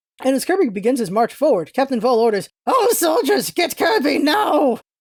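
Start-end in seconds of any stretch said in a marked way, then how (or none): 2.7-4.8 frantic, high-pitched voice. Captain Vol orders his soldiers to get Kirby: frantic Captain Vol voice. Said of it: "how frantic I made Captain Vol's voice".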